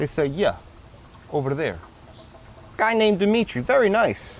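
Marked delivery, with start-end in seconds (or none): 0.3-1.8 soft put-on Eastern European accent. Retelling how the garage staff answered when he came for the car, Eastern European accent. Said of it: "In this Eastern European accent".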